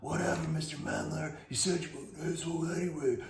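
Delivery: soft, mumbled mutter under the breath. Acting out a kid's retort while walking away, mumbled under the breath. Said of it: "do something like this under their breath".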